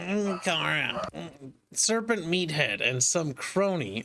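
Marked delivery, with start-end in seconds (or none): 0.0-1.1 put-on nasal voice. Reading a comic aloud in another voice: Linkara's nasally voice. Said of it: "Linkara's nasally voice".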